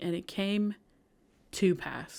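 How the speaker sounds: slow, deliberate, careful reading of each word. Recalling how somebody read a phrase aloud: slow, deliberate reading. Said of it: "somebody read it slowly, and it was literally like".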